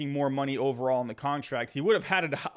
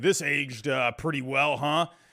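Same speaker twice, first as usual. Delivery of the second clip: mocking, put-on sarcastic tone. Retelling what commenters said about an old video: imitating sarcastic commenters. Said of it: "they would say sarcastically".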